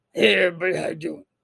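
rattled-off, fast radio host voice. Speaker greeting everybody as an aside, in a Wolfman Jack impression. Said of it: "I'm gonna pull in for Wolfman Jack".

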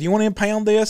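normal talking voice

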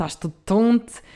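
put-on Madeira island accent. Trying out a phrase the Madeira way, imitated Madeiran accent. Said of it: "Eu tento dizer assim no sotaque da Madeira".

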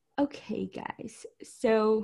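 deliberately sluggish, slow, drawn-out delivery. Imitating the other speaker's intro: imitating slow speaking. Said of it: "you were like".

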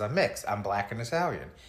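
normal talking voice

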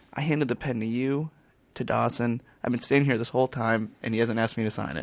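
soft, hushed, half-whispered stage whisper. Retelling what someone half-whispered during a show: imitating a half-whisper. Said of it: "leans over and whispers to me".

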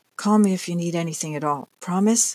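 hushed whisper. A woman hugs a younger woman goodbye and whispers in her ear, whispered. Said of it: "she whispered in Esther's ear".

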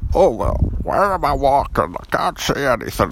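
high cartoon voice. Opening the podcast while pretending to be Elmer Fudd: Elmer Fudd voice. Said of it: "my name is Elmer Fudd".

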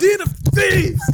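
very loud, high, shrill, outraged yell. Retelling a bartering scene interrupted by Jesus flipping tables, mock-angry Jesus shout. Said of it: "Jesus just flipping tables like".

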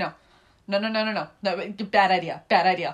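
play-acted, slow, drawn-out, firm, repeated delivery. Retelling a man refusing a bad plan: imitating a man refusing. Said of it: "he's shaking his head like".

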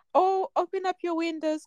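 high, mocking, posh teacher voice.

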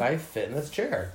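ordinary talk, nothing marked

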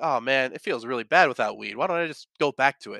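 ordinary talk, nothing marked

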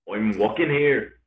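Irish-sounding accent. Taking turns trying accents with friends, saying the line in an Irish-sounding accent. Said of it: "I feel like both of those were Irish".

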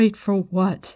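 unsteady, shaken. Left waiting with the others and told they are bait, a woman asks: shaky question. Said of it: "Nynaeve asked shakily".

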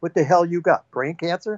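put-on pissed-off voice. Retelling what the speaker snapped back at a man, retelling a pissed-off retort. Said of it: "I was in a pissed off mood".

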